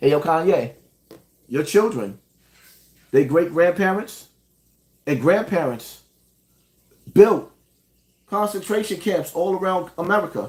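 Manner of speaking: tone brought down low. Addressing [name] again; lowered tone. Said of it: "Let me lower my tone".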